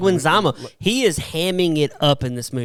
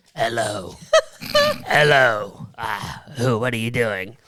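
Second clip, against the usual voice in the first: low, heavy smoker's voice; 5 semitones lower than usual. Describing the mom in a movie to friends, imitating a heavy smoker's voice. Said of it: "She sounds like she smokes five packs".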